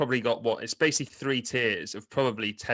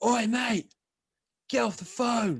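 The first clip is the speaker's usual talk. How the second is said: mock very high, shrill yell, as if from afar; 10 semitones higher than usual. Speaker retells what a man shouted at him from twelve bays away: retelling a shout. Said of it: "this guy basically shouts down from 12 bays".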